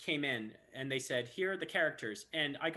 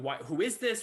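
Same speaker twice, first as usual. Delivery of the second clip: put-on yelling and screaming; 4 dB louder than usual. Retelling how the studio staff reacted to the arrival: imitating staff yelling. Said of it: "they're yelling and screaming about something".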